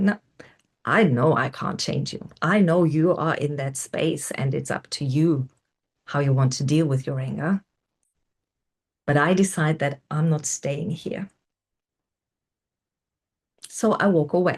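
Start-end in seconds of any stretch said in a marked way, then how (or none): none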